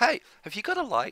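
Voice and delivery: put-on very high, cute American accent. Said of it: "like kind of a cute American accent".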